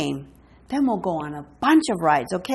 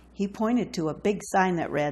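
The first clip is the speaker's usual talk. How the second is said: usual speaking voice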